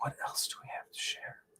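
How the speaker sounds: soft, unvoiced whisper under the breath.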